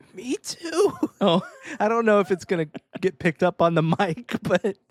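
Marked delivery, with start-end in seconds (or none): 0.2-1.0 voice breaking way up into a high squeak. Teasing a co-host whose voice just cracked, the speaker imitates the voice crack. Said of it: "you went".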